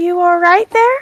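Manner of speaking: gentle, lightly rising pitch. Offering her hand to someone and asking in Elvish, in a soft voice. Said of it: "say in soft Elvish".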